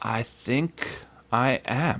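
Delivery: put-on slurred speech. Retelling how he answered when asked if he was okay, imitating slow slurred speech. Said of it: "He's like slurring his words. He's like speaking really slowly".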